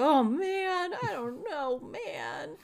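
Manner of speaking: very high, very slow cartoon voice, every word stretched. Showing how to model a game character on a known one: Shaggy voice. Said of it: "my Shaggy impersonation is on point".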